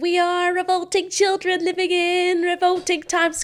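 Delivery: put-on very high, very nasal kid voice. Showing the voice for playing a school child role: very nasal child voice. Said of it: "it's very nasally".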